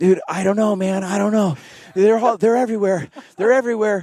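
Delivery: very high-pitched, frantic, panicked babble. Retelling a paintball fight when a partner panicked: imitating a panicked friend. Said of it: "And then he just panicked".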